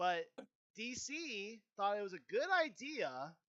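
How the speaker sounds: full-on, very loud, high, deliberate yelling. Talking about previous films with another speaker, the speaker is yelling on purpose. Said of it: "I'm just like purposely really yelling now".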